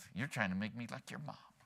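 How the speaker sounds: muttering under breath. Retelling a wife's remark about her husband, muttering under her breath. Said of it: "under her breath".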